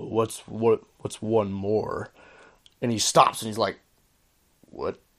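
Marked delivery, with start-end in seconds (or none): 0.0-2.1 deep, cold voice, much slower. Speaker retelling a story where a voice speaks to a walking man, deep cold voice. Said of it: "this deep, cold voice".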